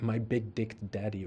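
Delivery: ordinary delivery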